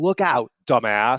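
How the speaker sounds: sudden, mock shout. Retelling his first wife shouting at him at the grocery store, retelling a shout. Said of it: "she shouts at me".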